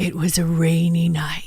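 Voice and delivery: low, eerie, spooky ghost-story narrator voice. Speaker tries a paranormal-show narrator's line and sounds like a campfire ghoul. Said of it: "I sound like a camp, like a campfire ghoul".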